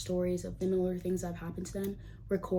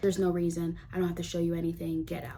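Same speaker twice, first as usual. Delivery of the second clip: ordinary talk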